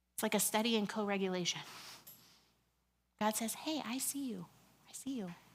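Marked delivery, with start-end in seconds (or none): 3.6-5.3 gentle, soft, hushed half-whisper, barely there. Speaker retelling how god answers someone who is yelling, in a soft half-whisper. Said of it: "God responds in a soft voice, in a whisper".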